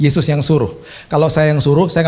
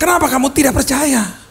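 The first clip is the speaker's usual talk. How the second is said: put-on very high, angry scolding tone; 11 semitones higher than usual. Retelling what someone said when he got angry, acting out angry question. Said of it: "dia marah malah".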